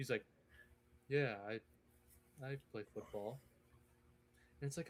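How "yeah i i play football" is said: bored, lifeless, dead-flat voice with zero energy. Retelling a boring interview, imitating Lloyd Cushenberry, bored and lifeless. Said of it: "soulless interview I've ever watched".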